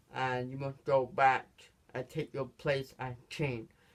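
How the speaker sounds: plain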